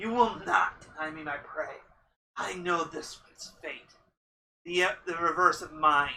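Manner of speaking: snarling, snarled monster creature voice. Game master voicing a clawed creature to a player, snarling. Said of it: "It just snarls at you and says".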